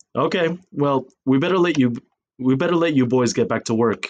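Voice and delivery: ordinary delivery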